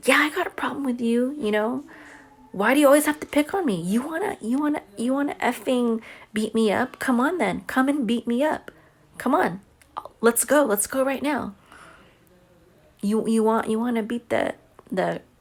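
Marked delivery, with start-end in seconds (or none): 0.0-11.5 mock confrontational full-voice angry yell, pitched up. Retelling yelling back at someone who always picked on them, retelling a yell. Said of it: "So I started yelling and said".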